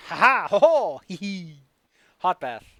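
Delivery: booming, very loud, very slow, drawn-out mocking goblin laugh. Voicing a goblin on a frog who laughs at the attack: mocking laughing goblin. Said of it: "He simply laughs at your attempt".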